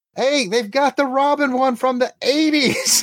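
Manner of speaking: shrill, very high, loud shout. Retelling a friend calling across a flea market: imitating Jeannie yelling. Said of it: "She yells at me from across the thing".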